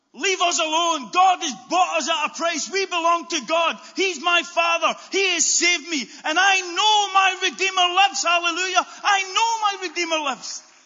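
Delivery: proclaimed at full shout. Declaring it out loud so the enemy will hear it, shouting. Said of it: "I'm shouting it out because I want the enemy to hear it".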